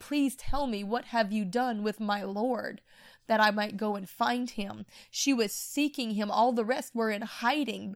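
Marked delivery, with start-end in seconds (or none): 0.0-4.8 mock-pleading, begging tone. Retelling Martha begging the angel at the empty tomb, retold begging plea. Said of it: "She begged the angel".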